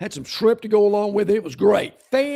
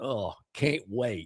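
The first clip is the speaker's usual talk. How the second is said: very hushed, low, quiet mumble under breath; 11 semitones lower, 11 dB quieter than usual. Retelling a reaction to a radio announcement, imitating muttering under breath. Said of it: "under my breath".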